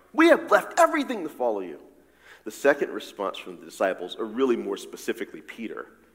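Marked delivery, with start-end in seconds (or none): 0.2-1.8 put-on defensive, put-upon voice, pitched up. Explaining a verse, the speaker acts out Peter's reply to Jesus, mock-defensive. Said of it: "is defensiveness".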